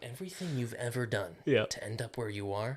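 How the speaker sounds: put-on threatening movie voice. Joking about threatening someone who owes money: channeling Liam Neeson. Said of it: "little Liam Neeson there".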